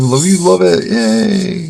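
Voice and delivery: sarcastic high, creaky screaming cheer. Imitating the viewers' reaction to one more tile: imitating viewers screaming. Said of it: "I hear you all scream".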